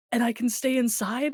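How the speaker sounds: thrilled, can't-believe-it, overjoyed happiness. Retelling what someone asked, imitating someone so happy. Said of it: "he's like he's so happy".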